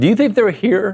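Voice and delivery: voice breaking upward. Co-host asking a question on a sports talk show, voice cracking. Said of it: "Why did my voice crack?".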